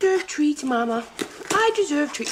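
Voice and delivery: high, cutesy, begging dog voice. Comparing a clip to Ambi, the speaker demonstrates Ambi's Twinkie dog voice. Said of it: "I'm so sorry about my dog voice".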